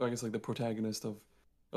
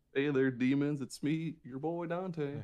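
put-on southern cowboy voice, higher pitch; 4 semitones higher than usual. Riffing on a remake where Dante is a cowboy, as cowboy Dante. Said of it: "Dante's a cowboy".

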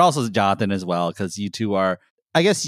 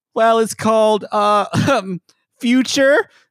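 put-on squeaky, very high small boy voice; 13 semitones higher, 4 dB louder than usual. Acting out Jonathan asking his mom for a record: imitating Jonathan as a kid, high-pitched. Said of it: "here's my impression of, uh, Jonathan asking his mom".

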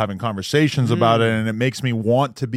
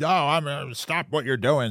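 mock angry, stern woman's voice; 4 semitones higher, 5 dB quieter than usual. Retelling mom walking in and ordering a stop: imitating a mad mom. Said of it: "She was so mad".

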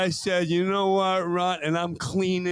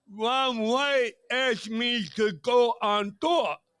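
put-on slow, slurred, high speech; 5 semitones higher than usual. Retelling a story from a comedian about touring: imitating Josh Blue's slurred speech. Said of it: "Josh talks with a slur".

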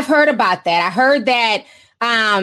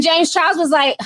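ordinary talk

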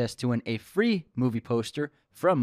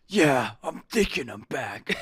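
dramatic, big action-movie style delivery. Answering a remark that the quote sounded like John Wick: John Wick voice. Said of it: "You sounded like John Wick".

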